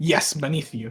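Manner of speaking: imitated eager tone. Retelling another player's reply: imitating an eager reply. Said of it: "Just so eagerly".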